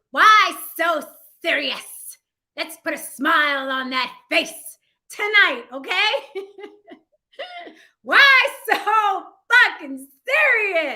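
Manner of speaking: loud, big villain character voice. Asking why so serious in a Joker voice. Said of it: "I'm asking in my Joker voice".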